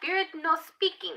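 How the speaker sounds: very high, put-on foreign-speaker broken English. Reading a tarot card about whether a twin will reach out, put-on foreign-speaker broken English. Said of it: "I don't know why I said it like that".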